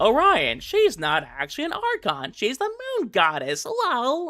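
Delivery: high, sing-song, nerdy know-it-all voice. Anticipating a viewer correcting them about a Genshin character, the speaker does a nerd voice. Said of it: "whenever I do that voice".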